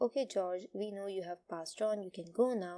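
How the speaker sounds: ordinary talk, nothing marked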